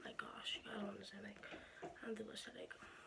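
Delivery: quiet, soft, hushed, pained voice.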